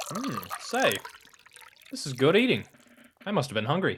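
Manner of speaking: muffled speech through a mouthful. A man eats sandwiches in a kitchen with two others, talking with mouth full. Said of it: "(MOUTH FULL)".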